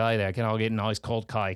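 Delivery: Australian accent, voiced from back of throat. Teaching viewers how to do an Australian accent, in an Australian accent. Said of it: "If you ever want to learn an Australian accent".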